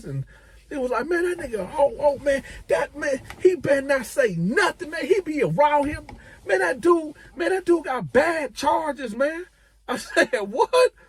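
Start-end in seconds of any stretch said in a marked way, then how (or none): 1.1-9.4 blurting, furious, very high, fast babbling rant. Retelling what a dude blurted out to him, retelling a fast, angry rant. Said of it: "this dude was talking so fast and so angry".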